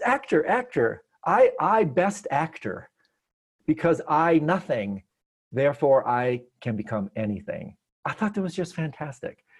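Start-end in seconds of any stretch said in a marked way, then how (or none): 0.0-7.8 thrilled, halting, swooping broken English. Retelling a man's reaction on hearing of an actor, imitating excited broken English. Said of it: "And he got all excited".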